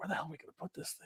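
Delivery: very quiet, hushed whisper. Retelling what the group whispered at a crazy unveil: imitating a whisper. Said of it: "we were literally whispering to ourselves".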